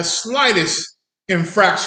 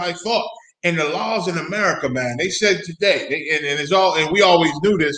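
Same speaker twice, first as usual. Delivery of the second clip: normal talking voice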